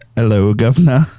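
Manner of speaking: put-on English accent. Answering friends who ask for an english accent: put-on english accent. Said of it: "Do the English accent".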